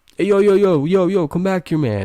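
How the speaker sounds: play-acted, high, calling-out holler. Retelling how his friend yelled to call him back: imitating a friend yelling. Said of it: "he yells out".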